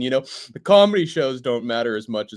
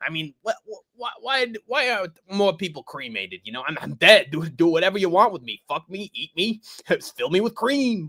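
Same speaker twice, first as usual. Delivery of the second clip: high-pitched, stammering, rambling rant; 6 semitones higher than usual. Retelling a miked-up Frank scene, imitating Frank. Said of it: "a mic on, on Frank where it's like".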